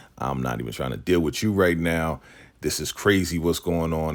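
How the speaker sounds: ordinary talk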